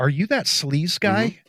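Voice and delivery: whispered. Retelling a stranger at a convenience store asking a question: imitating a whisper. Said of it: "whispered to me".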